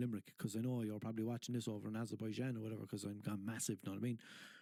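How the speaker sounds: usual speaking voice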